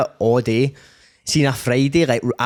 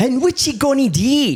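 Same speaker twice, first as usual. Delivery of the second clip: exaggerated, higher-pitched, put-on Scottish voice; 12 semitones higher than usual. Mocking a man who phones people: imitating George, overly Scottish. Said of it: "that overly Scottish pure".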